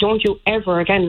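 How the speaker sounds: normal talking voice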